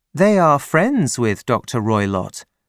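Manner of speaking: ordinary delivery, nothing marked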